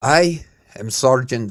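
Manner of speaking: put-on spoken in a Scottish accent. Telling a story, the speaker voices a Scottish sergeant introducing himself: Scottish accent. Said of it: "So the Scottish man began again".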